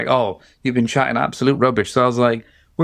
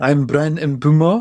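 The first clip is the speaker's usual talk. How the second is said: strongest over-the-top fake comedy French accent; 3 semitones higher than usual. Showing how to say a footballer's name, in the strongest comedy French accent. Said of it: "strongest comedy French accent and then say it".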